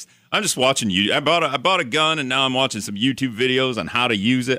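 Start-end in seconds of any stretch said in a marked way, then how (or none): 1.1-4.6 sudden put-on Southern American accent. Joking to another speaker about oneself: put-on Southern accent. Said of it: "I don't know why I went Southern there".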